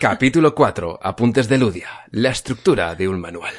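serious, grave, formal voice-over announcer voice.

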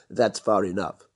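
ordinary delivery, nothing marked

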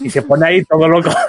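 normal talking voice

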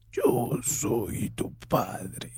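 villain voice pushed through a voice distorter. Trying out a voice distorter after always wanting to talk like this, in a Darth Vader voice. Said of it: "yo siempre he querido hablar así con, con la voz de".

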